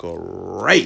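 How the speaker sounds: loud, belted-out, roaring cartoon tiger voice.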